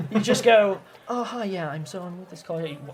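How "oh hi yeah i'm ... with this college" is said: indifferent, uncaring, much quieter. In a game, the speaker voices a worker at the end of a long shift: uncaring. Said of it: "He does not care".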